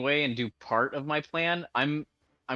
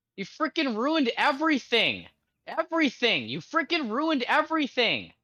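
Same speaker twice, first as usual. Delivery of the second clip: very high, swooping, accusing yelling; 11 semitones higher than usual. During a game, a player reacts to another player's move, yelling. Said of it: "are you yelling at me or Mike?".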